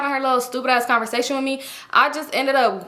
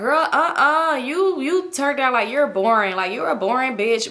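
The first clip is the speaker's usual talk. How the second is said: speech broken by laughter. Retelling a girl at a club calling someone boring: imitating someone laughing while talking. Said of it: "saying it in a laughing way".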